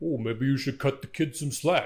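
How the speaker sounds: put-on thick New York Brooklyn accent, disguised voice. Speaker imitates Miles talking to his dad, in a put-on thick New York accent. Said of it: "He's like very like trying to sound like a different".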